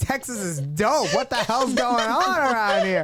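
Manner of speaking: acted, loud, high shocked outburst of disbelief. Retelling hearing a radio report as a kid, imitating own shocked reaction. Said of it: "I was, like, shocked".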